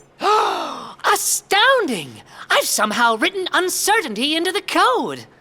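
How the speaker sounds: with a gasp. Speaking to Unibot, the robot the speaker coded, gasping.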